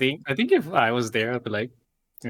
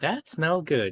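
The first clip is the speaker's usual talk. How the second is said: put-on old eighties TV cartoon hero voice; 4 semitones higher than usual. Imitating a clip from an old cartoon giving a PSA: Sonic impression. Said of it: "Sonic impression".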